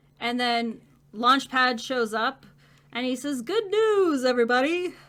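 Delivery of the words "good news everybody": pitch raised, swinging up and down. Retelling a scene where Launchpad shows up; Professor Farnsworth voice. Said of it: "in like Professor Farnsworth voice".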